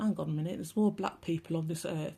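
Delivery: ordinary talk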